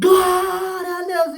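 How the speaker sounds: mock deafening, very high-pitched, ear-splitting yell. Recalling how they used to vent when things went wrong: retelling a very loud shout. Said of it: "dava um berro bem alto".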